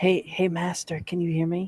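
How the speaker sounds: secretive, hushed half-whisper. A player calling to the master from outside the mill, half-whispering. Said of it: "I'm whispering this, by the way".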